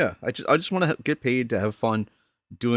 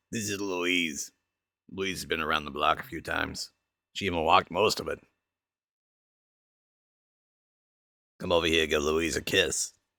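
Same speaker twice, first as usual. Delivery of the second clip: put-on old smoker voice; 6 semitones lower, 5 dB quieter than usual. Asked about their voices, a voice actor demos the old smoker character: Louise old smoker voice. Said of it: "that like old smoker is pretty funny".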